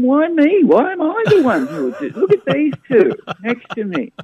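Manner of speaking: loud protesting yell. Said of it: "I just yelled back at them".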